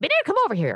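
very high, shrill, loud, rushed and rattled off. Retelling a scene where the maid grabs a girl's arm: Margaret Hamilton voice. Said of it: "Margaret Hamilton's voice, she's like".

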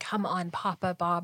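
whispering, pitched low. Recounting family Christmas present-opening, quoting own whisper. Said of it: "But I whispered".

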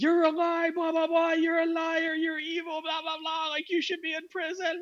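very high, screeched, screaming, accusing rant. Retelling a person leaning over a friend's table, imitating someone screaming. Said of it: "just starts like screaming like".

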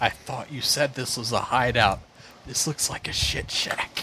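breathy, hushed, whispered aside. Voicing a character speaking to an elf guide: whispering in character. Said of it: "I whisper to Sinethel".

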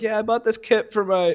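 regular Chicago guy voice.

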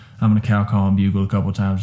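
plain

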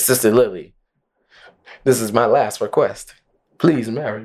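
normal talking voice

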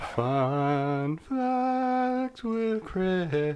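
high, very slow, drawn-out "fun". Starting a segment of fun facts: imitating John. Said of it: "That was the best John I could do".

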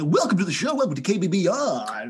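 put-on American 80s radio shock jock voice. Joking about radio station intros, in an american 80s shock jock voice. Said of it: "that kind of American 80s shock".

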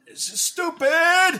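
sore loser's shrill, very high, very loud blurt. Impersonating another player whenever he's losing a game: imitating Caleb losing a game. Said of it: "that's my impersonation of Caleb".

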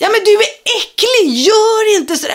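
high-pitched shouting in revulsion. Speaker retells yelling at a man blowing his nose onto the ground: retelling a yell. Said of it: "jag bara skrek".

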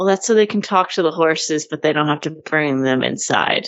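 put-on flat, deadpan delivery. Quoting a woman's reply while recounting a scene: retelling a deadpan line. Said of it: "she just deadpan says".

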